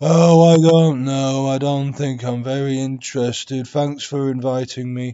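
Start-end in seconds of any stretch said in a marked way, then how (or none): 0.0-3.7 very loud yet bored, lifeless, flat monotone. Declining a lunch invitation without enthusiasm, flat, monotone, uninterested. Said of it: "the tone is very monotone and I don't have much interest".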